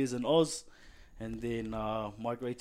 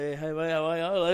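put-on Australian accent, higher pitch; 5 semitones higher, 4 dB louder than usual. Retelling greeting classmates after coming from Australia: imitating own Aussie accent. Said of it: "that's how I'm talking".

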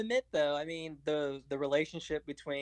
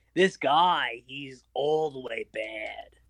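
put-on nasally New York accent, dragged out at the end. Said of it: "Nasally New York accent".

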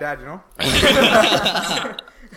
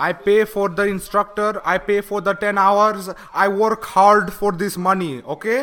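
fake Indian accent, put-on, laid on thick. Playing a driving instructor on a call with a student's parent, fake indian accent. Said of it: "I'm going full Indian here".

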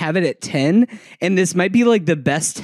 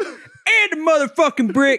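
put-on very high-pitched Baltimore accent; 10 semitones higher than usual. Celebrating Wayne Jenkins Day with the group, Wayne Jenkins Baltimore accent. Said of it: "working on my Baltimore accent".

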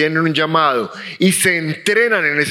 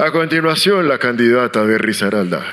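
deep announcer voice, like an emcee on a mic; 6 semitones lower than usual. Recalling being chosen master of ceremonies at a graduation; announcer voice. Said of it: "con voz de locutor".

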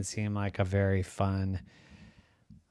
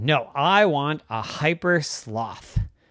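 usual speaking voice

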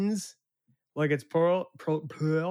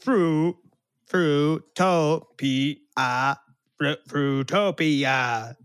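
put-on machine voice with guttural sounds, louder; 6 dB louder than usual. Imitating a speech machine struggling to pronounce a word: imitating Stephen Hawking's speech machine. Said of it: "hear this thing just make weird guttural sounds".

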